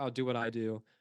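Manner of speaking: ordinary delivery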